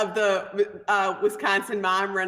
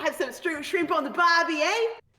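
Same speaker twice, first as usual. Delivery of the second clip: worst fake Australian accent, pitched up; 8 semitones higher than usual. Friends trying out accents, one attempts Australian in a bad Australian accent. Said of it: "the worst Australian accent ever".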